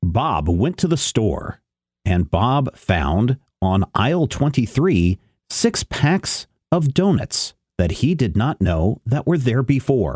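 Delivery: very slow, drawn-out audiobook-style narration. A speaker mocks how audiobook narrators read: mimicking slow audiobook narration. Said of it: "they talk really slow".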